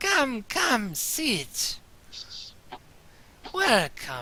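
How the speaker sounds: put-on swooping, dry, crackling old crone voice. The crone greets the newcomers, in a crackling crone voice. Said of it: "her voice crackles like dry weed".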